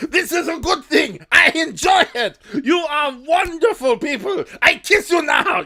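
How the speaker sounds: high, belted, creepy voice. Asked to use a more stereotypical voice, the speaker performs as Hans, stereotypical Hans voice. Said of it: "You need to go into the more stereotypical voice".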